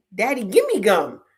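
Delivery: put-on said like a two-year-old child. Retelling a story about a little daughter with gum: imitating a two-year-old daughter. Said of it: "she was like two".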